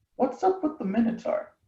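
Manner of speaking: hushed, breathy whisper under the breath. Speaking in character to a companion, asking quietly: whispering. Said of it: "whisper to her".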